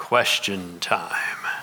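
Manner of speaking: rather low, flat monotone. Speaker recalling their father after finishing the story, in a monotone. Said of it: "say in a rather monotone kind of voice".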